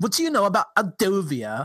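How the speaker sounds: bad New York accent. Quoting a character while listing the worst New York accents heard: bad New York accent. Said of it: "the worst New York accents I've ever heard".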